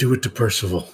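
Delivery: soft, sly, hushed half-whisper. Leaning down to a companion during the game scene, half-whispering. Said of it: "for whispering that without getting heard".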